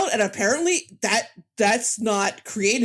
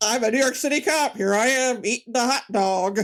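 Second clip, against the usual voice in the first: clumsy, bad, put-on American accent; 2 semitones higher than usual. Imitating how he plays a new york city cop, in a bad american accent. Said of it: "he does not do a great American accent. It is truly a Monty Python impression".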